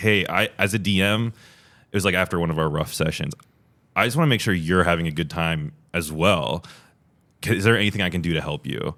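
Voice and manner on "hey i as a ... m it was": ordinary delivery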